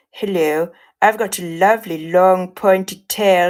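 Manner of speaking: seductive, devilish character voice. The speaker tries out a character voice: sexy devil voice. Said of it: "But do we do sexy devil voice?".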